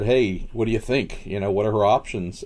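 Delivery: ordinary talk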